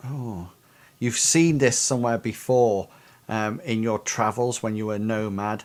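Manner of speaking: usual speaking voice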